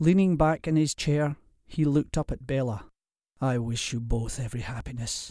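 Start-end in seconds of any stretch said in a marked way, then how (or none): 3.4-5.3 soft, noticeably quieter. A father leaning back in his chair wishes his daughter happiness, said softly. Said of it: "he said softly".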